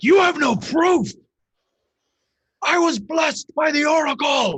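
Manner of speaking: very high, loud, wrathful, furious screaming. Narrator voices a man before a crowd, screaming in wrath. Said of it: "And he screams".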